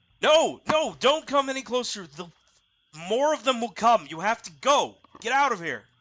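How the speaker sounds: shouted character voice. A game master voices Jasmine at the raft's edge, shouting at the approaching players. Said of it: "she shouts at you".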